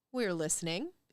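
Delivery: super creepy eerie twin voices in unison. Voicing two shopkeepers answering together: super creepy unison. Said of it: "in, like, super creepy unison".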